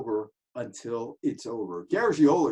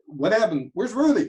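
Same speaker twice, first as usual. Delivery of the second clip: plain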